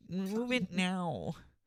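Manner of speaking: very high-pitched nasal voice. Imitating a commenter's demand after being told to make it nasal: nasal mocking voice. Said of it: "That sounds just like him".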